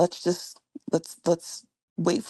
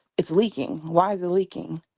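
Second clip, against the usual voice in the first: put-on shocked voice. Retelling the radiologist's words during the biopsy, imitating a shocked voice. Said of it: "you could hear the shock in her voice".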